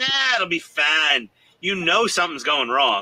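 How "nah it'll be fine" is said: casual, put-on southern US accent. Speaker jokes about hearing someone with a southern accent say it, mock southern accent. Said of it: "When I hear someone with a southern accent say".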